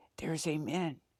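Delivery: whispered voice. Retelling how a sister on the bus spoke: imitating a whisper. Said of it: "the sister whispers".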